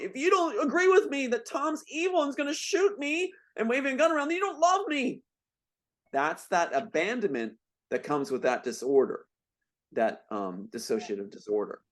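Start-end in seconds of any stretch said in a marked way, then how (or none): 0.0-5.2 very high, shrill screaming. Retelling his sister at their mom: imitating someone screaming. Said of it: "then she's screaming at my mom".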